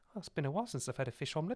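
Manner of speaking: put-on tiny, sly, teeny little voice. Retelling how Monica delivered a line on the show: Monica's tiny voice. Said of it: "In a tiny voice".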